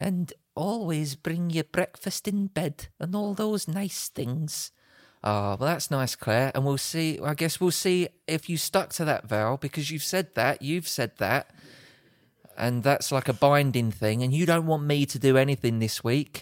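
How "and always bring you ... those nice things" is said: slow, thickly laid-on, bad Scottish accent. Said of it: "that is the worst Scottish accent I've ever heard".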